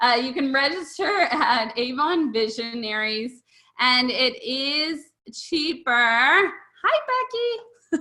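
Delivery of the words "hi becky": odd, high-pitched little put-on voice. Greeting Becky in the middle of an announcement, in a high-pitched voice. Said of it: "High-pitched voice".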